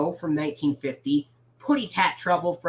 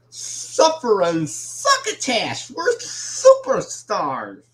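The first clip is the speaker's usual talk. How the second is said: put-on cartoon cat voice, shrill, booming, slow, drawn-out; 5 semitones higher, 5 dB louder than usual. Reading out what an item says, in Sylvester voice. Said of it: "That was just my Sylvester impression".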